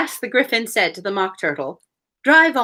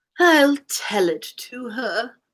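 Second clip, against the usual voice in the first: hollow, empty-sounding, ringing tone; 3 semitones higher than usual. Reading a book aloud, the Mock Turtle's line in a deep, hollow tone. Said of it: "in a deep, hollow tone".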